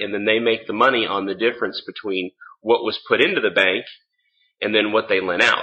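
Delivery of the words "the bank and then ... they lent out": ordinary talk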